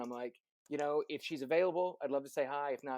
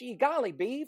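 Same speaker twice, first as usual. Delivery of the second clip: put-on very high, loud, old-sitcom fifties lilt; 10 semitones higher, 5 dB louder than usual. Describing how they auditioned for Peter Pan: Wally Cleaver fifties lilt. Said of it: "he's got that fifties kind of lilt".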